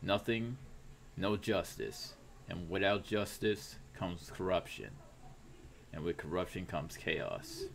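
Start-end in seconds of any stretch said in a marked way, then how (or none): none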